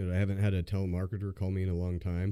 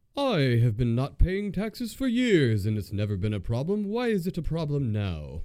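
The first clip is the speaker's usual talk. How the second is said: put-on British accent, loud and swooping; 7 semitones higher, 6 dB louder than usual. Retelling how a man messed with a robotic caller: put-on British accent. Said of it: "he put on a British accent and was like".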